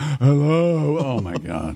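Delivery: put-on muttering under the breath. Acting out someone picking up the speaker's phone call, retelling a mutter under breath. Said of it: "Under his breath".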